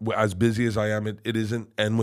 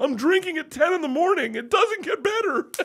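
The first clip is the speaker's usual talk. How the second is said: very high, sobbing, bawling cry. Retelling how he answered a fellow comic's question while bawling: retelling own crying words. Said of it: "And I just start bawling, crying, and I go".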